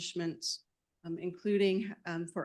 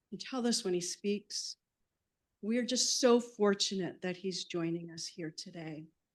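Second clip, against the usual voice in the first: choked-up, emotional voice. Introducing Doctor Clark to an audience, getting choked up. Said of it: "I'm getting a little choked up".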